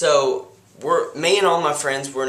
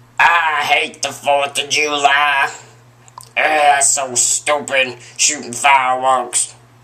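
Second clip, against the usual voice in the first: slow bellow with "July" dragged out; 5 dB louder than usual. Complaining about the Fourth of July and fireworks, Oscar the Grouch impression. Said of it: "that was my impression of Oscar the Grouch".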